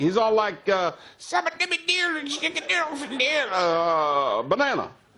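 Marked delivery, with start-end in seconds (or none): 1.2-4.9 put-on cartoon creature gibberish voice, higher pitched. Describing fun incoherent talk, then doing a Minion impression. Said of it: "That's a good Minion impression".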